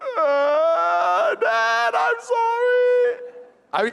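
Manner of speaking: put-on very high, very slow, tearful crying voice. Father retelling his daughter's apology after being caught, imitating a crying apology. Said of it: "I'm immediate crying".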